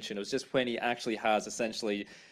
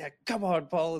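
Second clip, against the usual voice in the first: mock fed-up, worn-out pleading tone, pitched up; 6 semitones higher than usual. Retelling a scene where Nick sits on the ground: imitating exasperated Nick. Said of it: "so exasperated".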